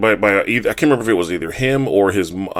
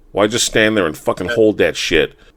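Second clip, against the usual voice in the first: usual speaking voice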